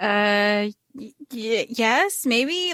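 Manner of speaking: very slow, halting, stumbling, grudging, reluctant delivery. Acting out a character answering whether she meant it: imitating a reluctant admission. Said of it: "she doesn't wanna, like, admit it".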